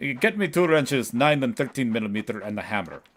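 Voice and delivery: put-on Russian-accented voice. Playing a game, voicing the dad character in a Russian accent. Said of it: "I should have Russian accent".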